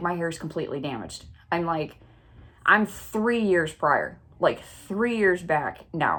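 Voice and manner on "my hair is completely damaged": usual speaking voice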